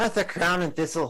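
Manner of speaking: put-on Irish accent. Asked to say a tavern's name with an irish accent: irish accent. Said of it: "Say crown and thistle with an Irish accent".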